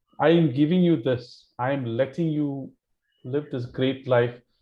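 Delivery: normal talking voice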